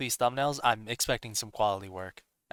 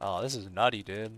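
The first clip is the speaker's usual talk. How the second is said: talking like a surfer bro. Gamer reacts while analyzing a level, sounding like a surfer bro. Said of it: "I shouldn't sound like a surfer bro".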